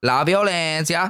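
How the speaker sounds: put-on Italian-sounding accent. Repeating the war's name once more for another speaker: Italian accent. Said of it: "Now you're saying it like an Italian".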